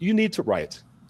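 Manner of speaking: put-on Panamanian accent. Quoting what she would say to him, in a soft Panamanian accent. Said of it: "in a soft Panamanian voice".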